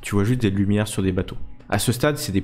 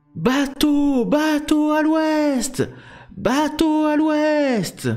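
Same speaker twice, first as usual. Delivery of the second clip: higher sailor lookout voice, calling out. Voicing the lookout high on the mast who spots a ship: ship's lookout calling from the mast. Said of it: "Vous entendez la vigie, euh, tout en haut du mât".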